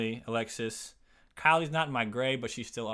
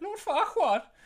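put-on pig voice, much higher, louder; 4 dB louder than usual. Recalling watching Shrek, the speaker repeats a name in the pig accent. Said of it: "I said it in the pig accent".

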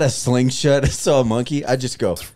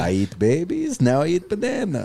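cartoonish movie vampire voice, swooping and high; 5 semitones higher than usual. Voicing a monkey character while watching with friends, in a vampire voice. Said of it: "This guy sounds like a vampire".

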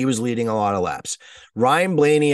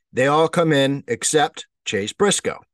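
ordinary talk, nothing marked

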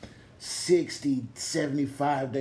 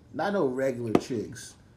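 normal talking voice

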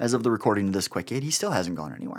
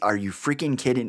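put-on stern, motherly tone. Retelling how a man's wife answered him, in a mock-stern motherly voice. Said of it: "in a very stern motherly voice".

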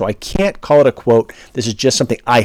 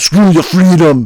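put-on heavy Austrian accent, raised, higher and louder; 5 semitones higher, 5 dB louder than usual. Retelling what someone said, as an Arnold Schwarzenegger impression with Austrian accent. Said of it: "my Arnold Schwarzenegger interpretation".

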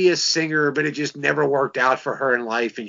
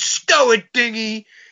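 grumpy yell, pitched up high; 8 semitones higher, 4 dB louder than usual. Describing the grumpy cook from the TV show Alice who yelled at Vera: Mel Sharples yelling. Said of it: "he'd always yell at Vera".

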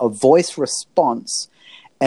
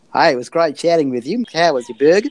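chatty line in a put-on Australian accent. Imagining a chat bot's follow-up message, voiced in an australian accent. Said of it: "I'm actually hearing all of that in an Australian accent".

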